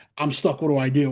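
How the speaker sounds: ordinary talk, nothing marked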